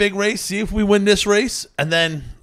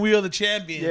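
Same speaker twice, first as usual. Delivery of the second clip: plain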